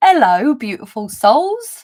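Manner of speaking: put-on, loud, sing-song, swooping London accent. Saying the greeting she typed in the chat earlier, in a london accent. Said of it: "My London accent".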